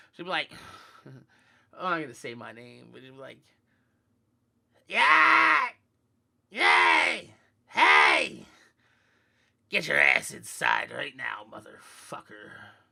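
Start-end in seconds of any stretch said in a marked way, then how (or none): 4.9-12.5 very loud, head-piercing, drawn-out screeching yell. Speaker acting out their mom ordering them inside, imitating mom's piercing voice. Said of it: "my mom's voice would pierce through your motherfucking head".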